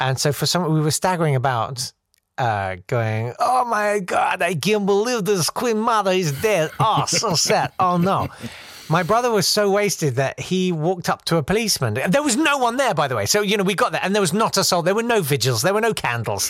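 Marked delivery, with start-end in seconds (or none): 3.4-8.3 put-on, amusing Eastern European accent. Retelling how you staggered about with others, thinking it hilarious, in a put-on amusing Eastern Bloc accent. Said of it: "amusing Eastern Bloc kind of accent".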